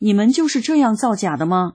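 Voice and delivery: ordinary talk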